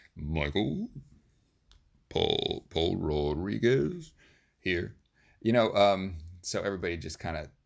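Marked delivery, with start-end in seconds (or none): 0.2-4.2 imitated, mock, put-on low voice. Recalling classmates doing the roll call in the teacher's style, imitating a low voice. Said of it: "like the low voice".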